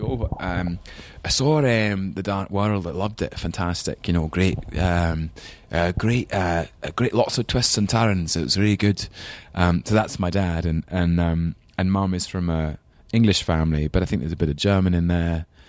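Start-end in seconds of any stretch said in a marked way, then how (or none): 0.0-9.1 put-on Scottish accent throughout. Speaker imitates their dad, who still speaks with a scottish accent. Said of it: "still speaks with a Scottish accent".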